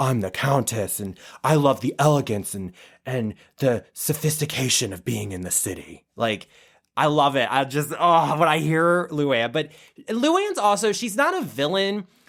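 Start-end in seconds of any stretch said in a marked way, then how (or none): 0.0-6.1 deep, low, raspy smoker's voice. Imitating Luann de Lesseps talking about the city: Luann de Lesseps deep smoker's voice. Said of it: "she talks like this".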